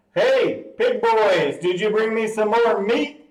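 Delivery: really loud, high taunting shout projected at a distance. A dwarf four hundred feet away calls out to the group, shouting really loud. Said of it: "and he shouts really loud".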